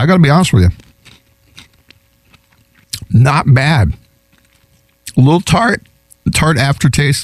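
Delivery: talking with mouth full. Tasting a chip and giving a verdict, talking with mouth full. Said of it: "don't talk with your mouth full. And here I am".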